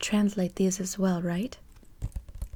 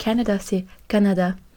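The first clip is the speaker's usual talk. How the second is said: ordinary talk, nothing marked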